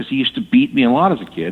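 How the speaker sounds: plain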